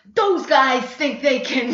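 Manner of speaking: put-on Italian-flavoured New York accent, laid on thick. Speaker imitates a man who talks like this when drunk or angry: Italian-sounding New York accent. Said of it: "he sounds Italian because he grew up with all Italians".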